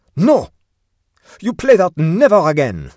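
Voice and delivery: very loud, high, shrill angry yell. A chef shouts at the man who supplanted him: shouted. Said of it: "shouted the chef".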